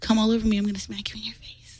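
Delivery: soft, hushed whisper, not breathy.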